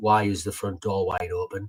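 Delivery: ordinary talk, nothing marked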